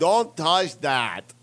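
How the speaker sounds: bad put-on Russian accent, sounding drunk. Acting out what a man said on stage, in a bad, drunk-sounding Russian accent. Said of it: "You just sound drunk".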